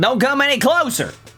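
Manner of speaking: put-on Southern accent. Voicing a game character line after deciding on a Southern accent: put-on Southern accent. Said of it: "Southern accent".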